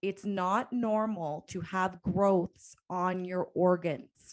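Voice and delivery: slow, deliberate, very clear speech. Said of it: "Listen to me very clearly".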